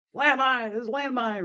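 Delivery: very high-pitched, alarmed holler. Recalling spotting a landmine, the speaker retells hollering a warning to everybody, retelling a holler. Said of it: "So I hollered out".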